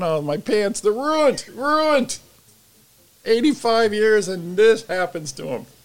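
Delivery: high, swooping, drawn-out whiny voice. Joking about old pants bursting open, acting out a mock whine. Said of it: "I'm gonna whine going".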